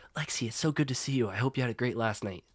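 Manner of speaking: speaking in a whisper. Voicing a character who sits by a classmate in class: whispering. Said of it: "starts whispering instantly".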